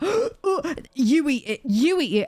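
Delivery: coaxing, pushy, drawn-out insistent urging. Retelling two others making a fuss over food: imitating people being loud. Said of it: "And they're being loud as well".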